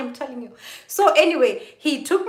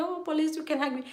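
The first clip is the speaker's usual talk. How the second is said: barely audible, very quiet, tearful voice; 3 semitones higher, 9 dB quieter than usual. Recounting her answer when a police officer asked to hug her: retelling words said while crying. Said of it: "I was crying".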